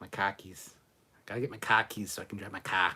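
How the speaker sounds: rough, attempted Boston accent. Comparing how different places say words, trying a Boston accent. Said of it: "Like Boston".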